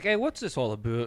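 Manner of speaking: put-on Canadian voice. Acting out a chainsaw-wielding canadian being confronted: imitating the canadian. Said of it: "The Canadian's like".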